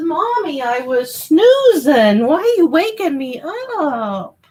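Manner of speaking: high pet voice, drawn out and rising. Speaking for the dog that was just woken up: voicing her dog. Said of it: "He says".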